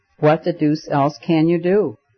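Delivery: ordinary delivery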